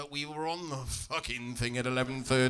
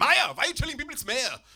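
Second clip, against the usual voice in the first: put-on high whine, upset older man, German accent. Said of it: "He doesn't like me saying Mayor".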